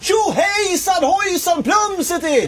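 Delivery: very high joyful yell, a whoop.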